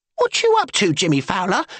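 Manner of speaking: shrill, high protesting cry. Narrator reading Lizzie protesting to Jimmy as the carriage turns back, shrill protest. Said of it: "Lizzie protested in a shrill voice".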